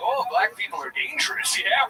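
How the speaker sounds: friendly put-on Canadian accent. Describing a Canadian guy being racist, imitating him in a mock Canadian accent. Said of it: "It's an impression".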